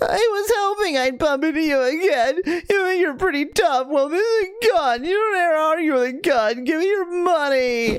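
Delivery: trembling, quavering, very high-pitched voice. Narrator reads the mugger's words as he blocks your way, in a quavering voice. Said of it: "He says in a quavering voice".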